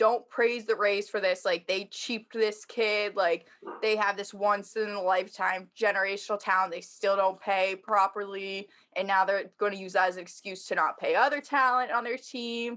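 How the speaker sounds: ordinary talk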